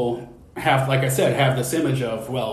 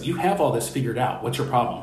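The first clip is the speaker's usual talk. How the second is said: playful joking delivery. Retelling what the speaker's therapist said to the speaker, retelling a joking remark. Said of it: "Jokingly, obviously".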